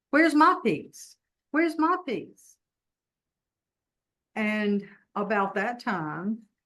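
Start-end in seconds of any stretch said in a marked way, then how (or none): 0.1-2.5 very high, demanding, repeated yell. Retelling a dream, calling after a friend who walked away: retelling own yell. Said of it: "and I'm yelling".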